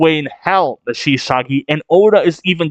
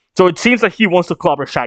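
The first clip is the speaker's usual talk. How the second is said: ordinary talk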